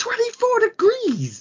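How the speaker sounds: put-on shout. Recounting spotting the thermostat setting in the dining room, retelling a shout. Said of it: "I shouted".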